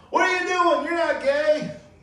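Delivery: shrill, loud demanding outburst. Retelling a wife smacking on the door at her husband: imitating the wife banging on the door. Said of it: "smacking on the door going".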